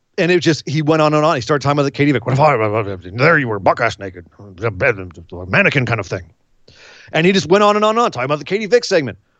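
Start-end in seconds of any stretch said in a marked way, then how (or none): 2.3-6.3 put-on phlegmy voice, lower pitch. Retelling a rambling speech about the Katie Vick segment: Vince McMahon impression. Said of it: "to be able to do a good Vince McMahon impression".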